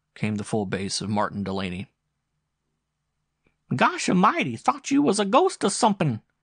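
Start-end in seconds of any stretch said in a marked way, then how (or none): 3.8-6.2 very high, loud, swooping squeaky voice. Reading a story, a man hails another at night: squeaky Louis Legrand voice. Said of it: "It was the squeaky voice of Louis Legrand".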